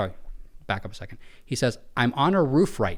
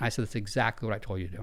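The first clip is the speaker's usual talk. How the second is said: normal talking voice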